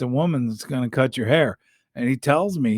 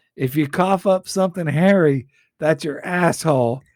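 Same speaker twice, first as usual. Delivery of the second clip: acted-out brash, rowdy, taunting holler; 4 semitones higher, 4 dB louder than usual. Recounting what he yelled out the window at a smoker: retelling a yell out the window. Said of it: "he yells out the window".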